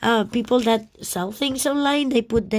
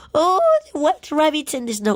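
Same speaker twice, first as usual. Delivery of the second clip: crazy-sounding, swooping, overexcited delighted gushing voice; 4 semitones higher than usual. Speaker browsing items, apologizing for sounding crazy. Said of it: "sorry for my voice. I I sound more crazy than usually".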